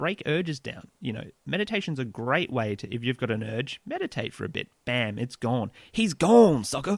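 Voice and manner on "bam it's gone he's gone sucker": loud put-on American vernacular dialect accent.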